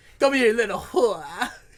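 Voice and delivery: put-on Bronx-style New York accent. Imitating the way a man says a line, in a Bronx New York accent. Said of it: "New York accent. I think it's like Bronxish".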